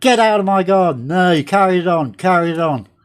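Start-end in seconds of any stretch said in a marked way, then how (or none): 0.0-1.1 barked shout, kept contained. Recalling ordering a man out of the garden, retelling a shout. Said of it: "And I'm shouting at him".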